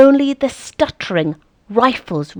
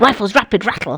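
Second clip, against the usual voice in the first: stuttering, spitting, staccato machine-gun rhythm delivery. Explaining an onomatopoeic poem line, spitting it like a machine gun. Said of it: "I'm sort of spitting as you say it, spitting like a machine gun, stuttering like a machine gun".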